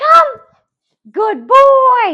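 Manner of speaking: bright, happy, excited, very high sing-song voice. Training a dog to come back on command, happy and excited. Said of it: "I'm still saying it happy".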